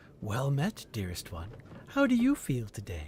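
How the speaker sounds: gentle, soft half-whisper. As game narrator, voice the mirror speaking to the player's reflection, soft half-whisper. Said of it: "a soft voice whispers".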